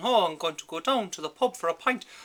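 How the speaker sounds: exaggerated stage Irish accent. Showing how people start talking once in Ireland: exaggerated stage Irish accent. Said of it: "people start talking like this".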